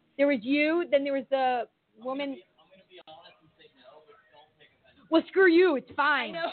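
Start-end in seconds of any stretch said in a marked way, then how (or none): 5.1-6.4 playful, teasing, joking tone. Psychic medium to a woman who had said no, teasing. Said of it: "I'm teasing you".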